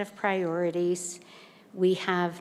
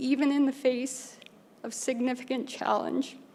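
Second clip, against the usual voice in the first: a little emotional, higher pitch; 6 semitones higher than usual. Ending remarks by thanking staff, getting a little emotional.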